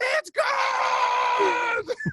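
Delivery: mock top-of-the-lungs shout, very high pitch. Recalling calling a basketball shot with way more energy, retelling a full-lung scream. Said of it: "So I'm screaming, top of my lungs".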